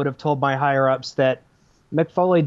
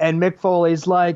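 usual speaking voice

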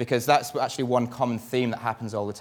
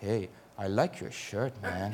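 put-on soft, slight Dutch accent; 2 semitones lower, 8 dB quieter than usual. Retelling a stranger speaking behind him in the gents toilets, in a slight Dutch accent. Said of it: "in a slightly Dutch accent".

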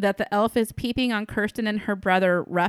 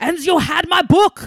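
wobbly, loud, high, fake German accent; 3 semitones higher, 3 dB louder than usual. Mimicking an actor's odd accent while complaining about it to a co-host, in a mock German accent. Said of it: "Is that a good German accent?".

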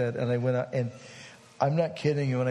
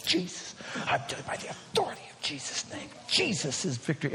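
loud, declaiming whispered shout; 4 semitones higher, 4 dB quieter than usual. Retelling proclaiming back and forth, reenacting shouting in a whisper. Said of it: "I'm shouting in a whisper and proclaiming in a whisper".

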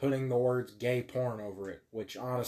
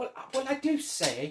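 put-on, very high British film-star voice; 12 semitones higher than usual. Explaining which actor Hugh Grant is, show how he always talks: Hugh Grant impression. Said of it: "and he talks like this".

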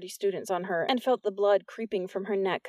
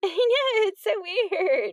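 giggling, very high-pitched, loud chatter; 12 semitones higher, 5 dB louder than usual. Narrator voicing a girl in the entourage gossiping, in a giggly voice. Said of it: "a giggly voice said".

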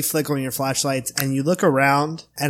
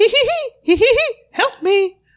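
put-on cartoon voice, much higher; 6 dB louder than usual. Describing what the others hear once the lights go on, a maniacal Mickey Mouse laugh. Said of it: "maniacal laugh".

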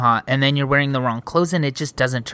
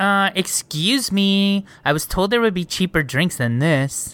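put-on slow, stingy, grumbling cheapskate voice; 4 semitones higher than usual. Retelling how the other speaker asked about drink discounts, imitating someone sounding cheap. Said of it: "you sounded so fucking cheap when you said that".

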